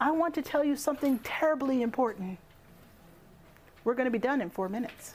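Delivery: long dramatic pause before the last line. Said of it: "Same way with pauses".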